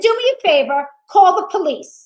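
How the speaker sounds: loud, slow mock voice. Retelling an argument with a man, retelling raising the voice. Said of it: "And now I start to raise my voice".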